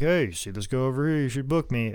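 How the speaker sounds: ordinary talk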